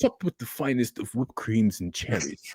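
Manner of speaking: bad put-on French accent. Improvising a fancy dessert pitch with a partner, in a bad French accent. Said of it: "I can't do a French accent".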